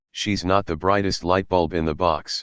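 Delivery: ordinary talk, nothing marked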